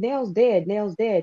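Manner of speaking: tearful, shocked crying out. Retelling telling people at a table about a death: retelling own crying words. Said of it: "And I started crying".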